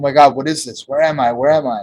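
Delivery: acted terrified, panicked fear. Retelling an ayahuasca experience, voicing their past self's terrified panic. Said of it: "I was terrified".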